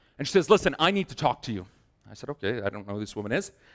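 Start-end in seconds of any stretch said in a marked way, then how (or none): 0.5-1.7 irate, angry woman's voice. Retelling a phone call from a woman during Bible study, imitating an angry caller. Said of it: "She sounds very angry".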